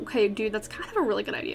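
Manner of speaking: ordinary talk, nothing marked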